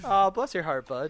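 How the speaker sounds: fake patronizing, talking-down condescending tone. Joking about calling a friend bud: mock condescending tone. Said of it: "if I was being condescending".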